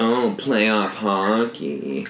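teasing, put-on sexy voice. Teasing another speaker about how he says playoff hockey, mimicking him: mock sexy voice. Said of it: "the sexy voice".

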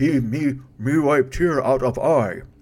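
put-on monster voice. Redoing a line you just said, now in a Frankenstein monster voice. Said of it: "almost like a Frankenstein voice".

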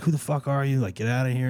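yelling. Retelling how a friend confronted an intruder: imitating someone yelling. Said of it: "started yelling at this guy".

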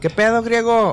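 hollered, carrying call. Retelling yelling back after three knocks at the door: retelling a shout. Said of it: "Y grité".

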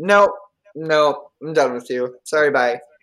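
put-on cold, savage, dismissive tone. Retelling a character's refusal: imitating a cold, savage brush-off. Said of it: "savage as hell, just cold".

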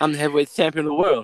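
high, heavy put-on lisp on every s. Recalling talking with a funny lisp, doing a Mike Tyson lisp. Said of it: "I've been talking with a funny lisp. Like Mike Tyson, you know, lisp".

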